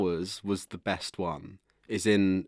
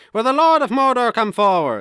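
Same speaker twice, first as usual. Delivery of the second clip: put-on full-voiced Irish accent; 10 dB louder than usual. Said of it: "he has Irish accent in some bits".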